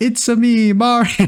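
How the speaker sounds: high, drawn-out movie-trailer hero delivery. Quoting the line from the new movie trailer: Mario voice from the trailer. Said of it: "the movie trailer drops, and it's like".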